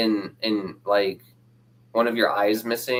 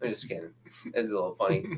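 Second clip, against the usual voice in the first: plain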